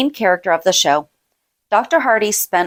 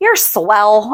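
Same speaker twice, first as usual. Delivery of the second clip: mock sarcastic tone. Quoting a man who said it to her out of nowhere, retelling a sarcastic remark. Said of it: "It was kind of sarcastic".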